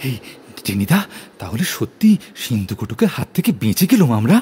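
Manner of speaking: still out of breath, panting while talking. Reading a boy asking after escaping on foot: still out of breath. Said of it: "আমি তখনও হাঁপাচ্ছি।".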